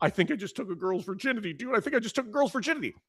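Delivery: put-on, high, frantic freaked-out panic with repetition. Telling a story, speaker quotes a friend who came to him: imitating a friend freaking out. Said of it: "he's like freaking out".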